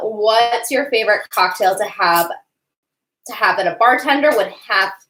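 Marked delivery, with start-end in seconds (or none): none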